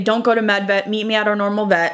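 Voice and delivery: ordinary talk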